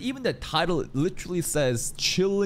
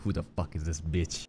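seething, furious, very upset outburst; 9 semitones lower, 6 dB quieter than usual. Voicing a character meeting a rival, super upset. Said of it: "I want her to be fucking super upset and be like".

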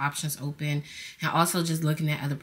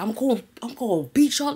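put-on pitched-up, loud New York accent; 8 semitones higher, 7 dB louder than usual. Describing a funny prankster to viewers: imitating Medici's New York accent. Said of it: "his New York accent and how he be like".

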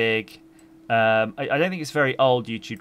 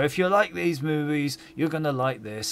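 put-on slight Scottish accent, higher; 3 semitones higher than usual. Imitating the Critical Drinker's early videos: slightly Scottish accent, Critical Drinker. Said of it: "talking in his slightly Scottish accent".

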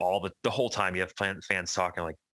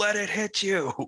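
put-on very high-pitched whiny prepubescent kid yell; 14 semitones higher, 4 dB louder than usual. Retelling a kid at second base in a video, mimicking a whiny prepubescent scream. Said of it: "screams at this whiny prepubescent voice".

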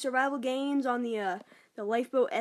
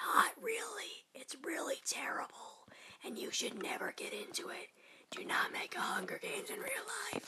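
very soft whisper, barely a breath; 8 semitones higher, 11 dB quieter than usual. Player explaining Minecraft Survival Games during a round, whispering. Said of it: "Why am I whispering like this?".

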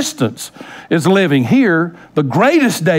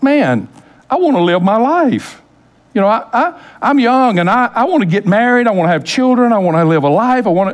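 put-on, mildly disappointed voice; 4 semitones higher than usual. Retelling what young people ask the pastor: imitating a disappointed voice. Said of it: "a little bit of, uh, disappointment in their voice".

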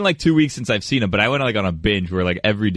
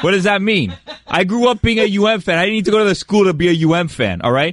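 high, laughing, cocky Miami bro bluster. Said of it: "the Miami Bro character".

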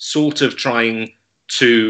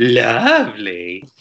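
mock leering tone, "lovely" drawn out suggestively. Mimicking how someone else said 'lovely', imitating objectifying tone on 'lovely'. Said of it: "a little objectifying in the tone of your voice".

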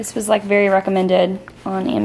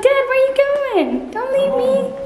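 silly, ridiculous puppy voice, way up high. Bringing the puppy to its new house, the owner speaks for it, ridiculous puppy voice. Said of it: "My puppy voice is just ridiculous".

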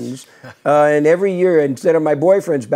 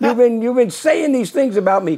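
put-on girl scream, higher; 8 semitones higher than usual. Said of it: "started screaming".

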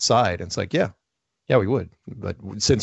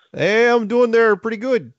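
loud, very high-pitched Wisconsin accent; 13 semitones higher, 6 dB louder than usual. Caller claiming to be from Canada greets the host, in a Wisconsin-sounding accent. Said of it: "That sounded Wisconsin. That was not Canadian".

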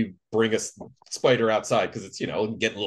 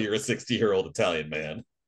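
normal talking voice

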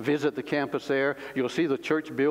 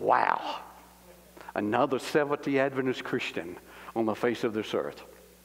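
soft, hushed half-whisper; 3 semitones lower than usual. Retelling being hugged close and answering: imitating own past half-whisper. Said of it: "and I whispered".

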